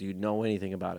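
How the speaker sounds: ordinary talk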